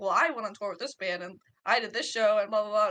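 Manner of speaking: ordinary delivery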